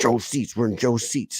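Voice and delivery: hushed whisper, close in. Recounting what they told Joel while he yelled at a lady, retelling a whisper. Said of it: "I'm like whispering in his ear".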